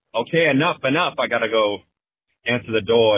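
plain

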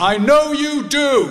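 loud, carrying, very high voice. Leaving the hospital ward, recounting the father's parting words: retelling a loud remark. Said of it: "in a loud voice".

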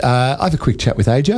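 normal talking voice

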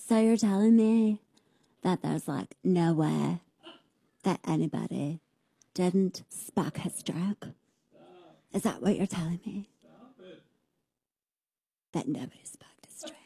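mock creaky vocal fry. Parodying someone's questioning, mocking vocal fry. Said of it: "I can't stand the vocal fry".

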